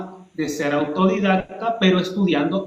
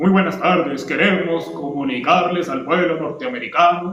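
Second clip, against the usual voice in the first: artificial, stiff, affected put-on formal speechmaker delivery; 3 semitones lower than usual. Contrasting Obama's natural way of speaking with the opposite: stiff, affected voice. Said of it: "Su voz no es realmente así impostada".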